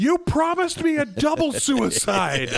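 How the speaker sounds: play-acted ghost scream, pitched very high. Retelling a ghost wife's line to her living husband: imitating a scream. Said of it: "she just screams".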